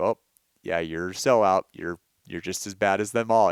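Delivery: ordinary talk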